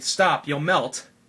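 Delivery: desperate, frantic tone. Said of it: "Anna's frantically saying".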